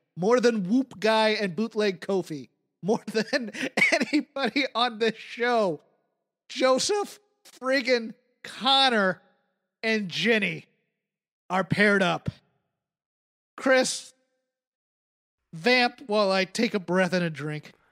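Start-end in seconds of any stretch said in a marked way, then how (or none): 0.2-12.3 angry, worked-up, let-it-all-out tirade. Speaking to Chris about the show, letting anger out. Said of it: "Let me get my anger out".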